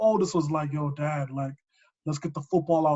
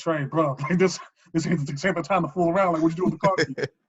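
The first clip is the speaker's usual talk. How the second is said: ordinary talk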